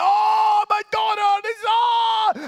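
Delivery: mock very high, very loud, drawn-out wailing sob. Retelling reading a daughter's message at the barbers: imitating own sobbing. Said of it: "I am sobbing".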